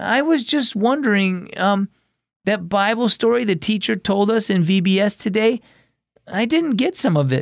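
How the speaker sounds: unsure halting voice. Calling from the sidewalk, the speaker asks about the teacher's bible story: hesitant. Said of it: "Hayden said hesitantly".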